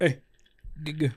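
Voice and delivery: half-hearted, lazy, minimal-effort toss-off. Suggesting saying 'get good' really lazy instead: lazy, low-effort delivery. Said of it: "get really lazy with it and just be like".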